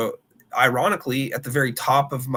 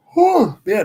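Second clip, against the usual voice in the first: loud, high yawn through the words; 9 semitones higher, 7 dB louder than usual. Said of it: "I'm not yawning at your picks".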